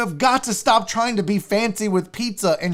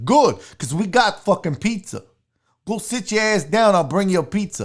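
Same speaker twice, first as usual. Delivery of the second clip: put-on rude, condescending New York accent. Describing rude pizzeria staff answering a customer, weird Vinny Barbarino voice. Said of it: "I sound like a weird Vinny Barbarino".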